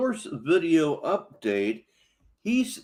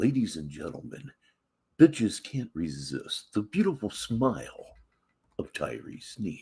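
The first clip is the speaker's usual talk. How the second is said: very deep 1970s FM disc jockey voice; 9 semitones lower, 4 dB quieter than usual. A host announces the next name to everybody in a 1970s FM disc jockey voice. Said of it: "in kind of an old nineteen seventies F".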